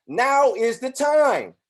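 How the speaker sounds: high, loud, very slow, drawn-out, intense, emotionally charged. Speaker demonstrates the point about speaking with intensity: emotional intensity. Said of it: "I'm going to speak this also with emotional intensity".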